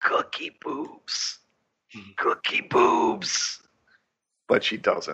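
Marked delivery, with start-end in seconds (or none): 0.0-3.6 slow, whispered, raspy, squeaky voice. Speaker acting out what Jamie should have said in her psychic moment, raspy squeak. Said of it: "she should have raspily squeaked out".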